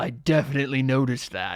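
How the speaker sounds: loud, rumbling voice. Narrator voicing something behind the door as you close it: rumbling voice from beyond door. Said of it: "you hear it say in a rumbling voice".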